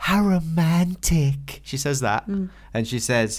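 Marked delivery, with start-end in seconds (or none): 0.0-1.6 put-on girlish little-girl kitten character voice. Sharing quotes for a patron, the speaker says a line in Marie voice. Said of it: "a shout out in the voice of Marie".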